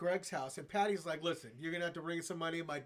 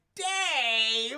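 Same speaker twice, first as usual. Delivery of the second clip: very loud, high, stretched-out, drawn-out call; 8 semitones higher, 11 dB louder than usual. Retelling a friend's mom catching a dropped pistol: Patty voice. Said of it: "with that Patty voice".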